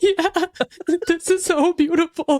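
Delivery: teary, crying voice, high-pitched. Retelling own words while moved at a meeting: imitating own past crying. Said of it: "and I was crying".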